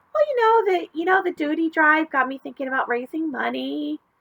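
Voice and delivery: nervous, fumbling voice. Reading a story aloud, a nervous child answers: voice higher than usual. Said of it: "My voice came out a little higher than usual".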